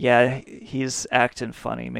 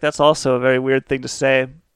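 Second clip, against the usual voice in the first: ordinary talk, nothing marked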